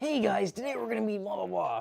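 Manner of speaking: slightly high, raspy video host voice. Speaker trying to recall a YouTuber, imitating his intro: raspy Scotty Kilmer impression. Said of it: "He kind of has a really raspy voice".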